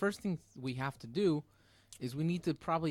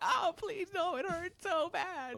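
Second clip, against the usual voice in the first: fake tearful pleading, very high, very slow, drawn out. Imagining another speaker getting a tattoo during an interview: mock crying in pain. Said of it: "you'd be crying the entire time".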